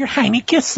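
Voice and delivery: very high, squeaky cartoon voice. Listing cartoon voice acting the speaker won't miss hearing; squeaky Kid Icarus voice. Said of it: "hearing Kid Icarus squeak and say".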